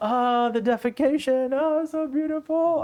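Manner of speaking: very high, slow, floating, blissed-out rapture. Retelling how Ramakrishna reacted to a passing donkey: imitating Ramakrishna blissed out. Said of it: "blissed out".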